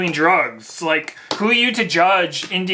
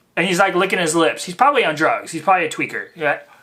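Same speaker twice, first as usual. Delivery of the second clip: ordinary delivery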